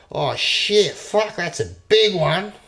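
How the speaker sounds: put-on high, loud, slow Australian-accented swearing.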